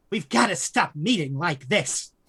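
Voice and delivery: thin, low-toned creature voice. Narrating a scene, voicing the being that looks up at you, thin low-toned voice. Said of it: "a kind of a thin, lower tone voice".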